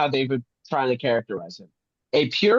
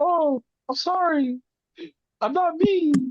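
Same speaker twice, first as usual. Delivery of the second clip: timid apologetic tone, very high and slow; 14 semitones higher than usual. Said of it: "you decide that you wanna go".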